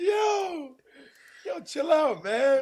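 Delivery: very high, very slow, unbothered, laid-back drawl. Imitating the other speaker telling him to chill out: imitating a friend saying chill out. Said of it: "I'm about to do exactly what you did".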